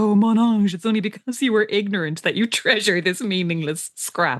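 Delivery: imploring, beseeching, begging tone. Recounting a repeated argument, acting out him pleading with her: imitating pleading. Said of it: "he's pleading with her".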